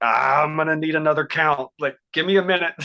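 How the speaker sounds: rattled, high-pitched, loud blurted outburst.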